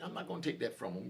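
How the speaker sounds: ordinary delivery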